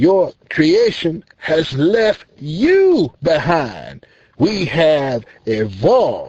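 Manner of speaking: slow, arrogant, disrespectful, condescending speech. The senator in the story speaks directly to Jesus: arrogant, disrespectful senator. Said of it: "The self-proclaimed honorable, disrespectful, arrogant senator now speaks. / The disrespectful, arrogant senator speaks. Now, I gather by your condemning judgment you are not too fond of or in favor o".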